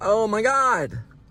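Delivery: scared gasp, high, slow and drawn out.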